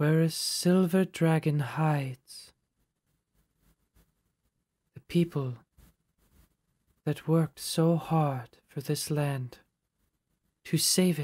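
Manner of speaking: responding divine spirit voice. Game master voices the answer to a divination spell, in a very soft voice. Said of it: "So you get back a very soft voice".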